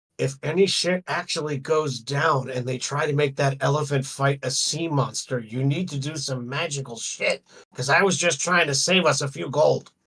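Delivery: urgent, half-whispered stage whisper aside. Speaking in character, half-whispering into another character's ear: half-whispering in someone's ear. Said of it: "I whisper in his ear".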